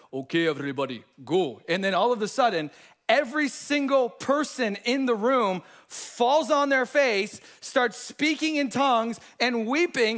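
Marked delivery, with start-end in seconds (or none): 0.1-1.6 put-on deep, low voice with a Russian accent. Retelling a church youth gathering, the speaker quotes a man in a deep Russian voice. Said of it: "this really deep Russian voice".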